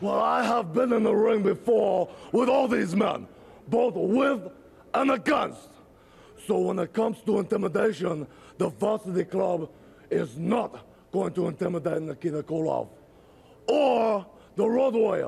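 overdone gravelly voice. Reading a returning special referee's interview quote, gravelly Nikita Koloff voice. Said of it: "way too much gravel in his voice".

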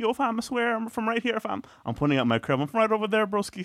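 high, earnest, acted begging plea, very high. Retelling being stopped by two tall guys: imitating own past pleading. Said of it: "pleading a case".

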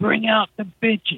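high, rowdy, acted drunken hollering. Retelling how one guy at a party kept yelling: imitating a guy yelling. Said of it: "one dude starts yelling".

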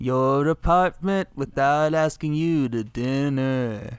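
put-on, weird, overly nice cop voice. Doing a bit as a weird, nice cop: John C. Reilly impression. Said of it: "That's a really good John C. Reilly impression".

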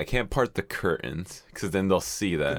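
ordinary talk

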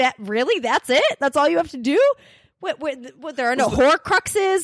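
incredulous, can't-believe-it string of rising lines. Retelling a reaction to a villain killed so easily: retelling own disbelief. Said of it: "I'm like".

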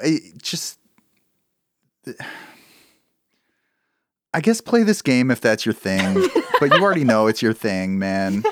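let-down, disappointed voice with swooping pitch. Talking about a game with the others, sounding disappointed. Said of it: "you sound so disappointed".

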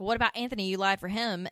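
ordinary delivery

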